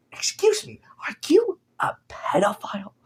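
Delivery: slow, breathy, hushed interviewer voice, drawn out. Imagining being interviewed by Nardwuar: Nardwuar impression. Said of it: "You do his voice so well".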